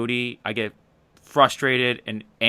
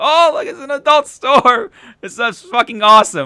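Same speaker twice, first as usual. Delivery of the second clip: mock sarcastic cheer, very high, loud and shrill; 12 semitones higher, 9 dB louder than usual. Retelling passing an adult store while driving: retelling a sarcastic remark. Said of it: "with sarcasm".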